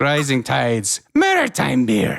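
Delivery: put-on comic puppet voice. Reading a beer ad aloud, slipping into a Triumph voice. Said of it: "I think I just started doing Triumph".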